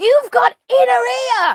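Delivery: mock blackout-drunk babble, very high and loud. Acting out a blackout drunk person staggering around: imitating a blackout drunk. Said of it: "someone who is blackout drunk, staggering around".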